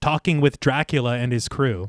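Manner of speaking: ordinary talk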